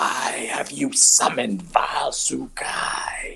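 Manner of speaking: sibilant, hissing snake voice on the words. Narrating a story, voicing a huge human-headed snake in a hissing snake voice. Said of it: "in a hissing voice says".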